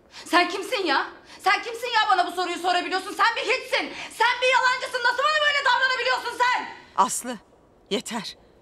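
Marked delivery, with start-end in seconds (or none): 0.3-6.7 shrill, very high, loud yelled shouting. In a drama, Aslı answers the one who asked if she's okay; shouting. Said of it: "Lütfen böyle bağırıp durma".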